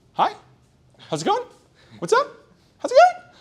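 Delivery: rising intonation at the end of going and up. Explaining tone control, the speaker demonstrates raising the voice at the end of a statement. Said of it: "raise your voice at the end of a statement".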